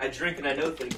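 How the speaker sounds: ordinary talk, nothing marked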